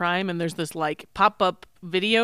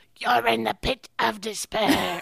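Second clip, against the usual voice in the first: slow, grave, gravelly, rough rasping voice; 3 semitones higher than usual. Quoting a torture-chamber character from a movie: imitating a serious gravelly voice. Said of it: "the serious gravelly voice".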